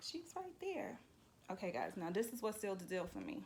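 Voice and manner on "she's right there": very high, calm, casual, unbothered voice. Speaker retells a man's reply while she searched for her dog, mock-calm retelling. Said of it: "he's sitting there cool as cucumber".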